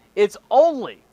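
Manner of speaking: stress on only. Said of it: "I stress the word only".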